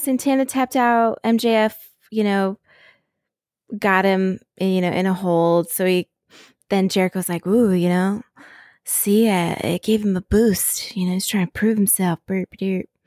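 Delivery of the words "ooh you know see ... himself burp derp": put-on breathy voice. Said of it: "the breathy voice and the burp a derp".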